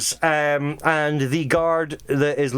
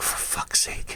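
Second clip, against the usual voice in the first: soft, exasperated whisper under breath. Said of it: "he's like".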